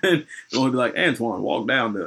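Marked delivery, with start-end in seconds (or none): 1.0-2.1 slight Southern drawl narrator voice. Showing the narrator voice used for the overstory: slight Southern drawl narrator voice. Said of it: "so the one that sounds like this".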